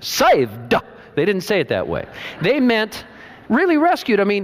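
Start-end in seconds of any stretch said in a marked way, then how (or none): 0.0-0.7 over-the-top southern US accent on saved. Showing how the word saved was not said: southern accent on saved. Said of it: "they did not say saved with a southern accent".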